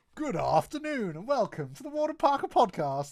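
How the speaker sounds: plummy upper-class English accent, very high and loud. Opening the podcast after a countdown, in a very posh english voice. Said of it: "It was almost very posh".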